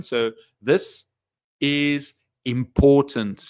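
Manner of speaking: stressed, slowly stretched-out word important. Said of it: "vary the pitch and tone".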